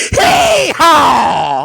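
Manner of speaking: high, loud hee-haw shout. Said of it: "his second command goes".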